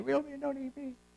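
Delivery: high, soft, mocking put-on voice pitched way up.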